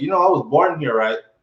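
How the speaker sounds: switching into a put-on American accent. Speaker retelling being questioned at a bank, replying in an American accent. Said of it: "then I switched into the American accent".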